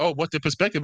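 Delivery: mocking, teasing, parroting echo. Arguing about voting, imitating the other speaker: imitating the other speaker. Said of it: "you sound like".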